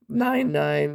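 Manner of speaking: voice breaks, cracking mid-number on the numbers. Reading out a card's text aloud, the speaker's voice cracks mid-number. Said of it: "voice crack".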